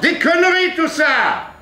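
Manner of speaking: mock shrill outburst, very high, loud shout. Teacher recalls a student's outburst, retelling a shout. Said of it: "A crié un jour Guillaume".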